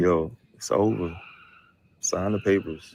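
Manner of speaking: slow, flat, emotionless deadpan with no feeling. Showing how to tell him it's over: flat, no emotion. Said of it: "talking to him with no emotion".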